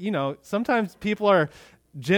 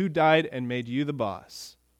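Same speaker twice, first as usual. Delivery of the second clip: mock dead-serious, very grave and solemn tone; 3 dB quieter than usual. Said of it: "in a very serious way".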